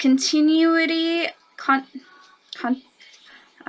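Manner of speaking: breathy stuttering false start, stammer on "con". Reading a description aloud, stuttering. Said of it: "I'm stuttering, sorry".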